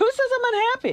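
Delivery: irritated, angry, very high-pitched voice. Answering others who call the speaker unhappy: sounding angry. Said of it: "you do sound angry, [name]".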